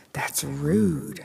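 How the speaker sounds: spoken in a hiss. Trina answers Tina, who says she doesn't know her; hissed. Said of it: "Trina hissed".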